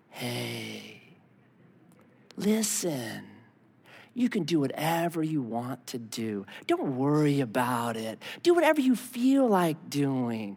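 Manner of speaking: smooth, low, soft coaxing demon voice, drawn-out "hey". Showing what a demon really sounds like, soft coaxing demon voice. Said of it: "That's what a demon sounds like".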